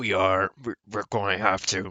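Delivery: put-on gruff voice. Answering another speaker in a put-on gruff voice. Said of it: "the Gruffy McGruff voice".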